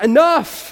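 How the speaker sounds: high, fed-up, annoyed shout. Retelling what Paul finally said to the girl: imitating an annoyed outburst. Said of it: "as he's annoyed".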